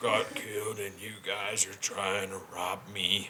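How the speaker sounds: weird, hushed, slow put-on voice. Mocking how Stephen Lang talked when he started talking, imitating his weird voice. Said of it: "trying to do a fucking Batman voice".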